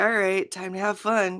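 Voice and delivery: put-on bored, fed-up voice. Retelling how Meg acts once the jig is up: imitating Meg being over it. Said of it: "Meg just being like".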